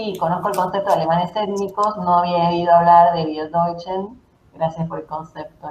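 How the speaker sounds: ordinary talk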